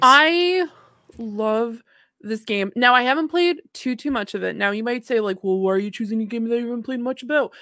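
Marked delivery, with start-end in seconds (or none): 5.4-7.5 quick, poking, skeptical and challenging tone. Acting out a co-host's objection to the pick: imitating a co-host. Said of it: "I think she's doing an impression of me".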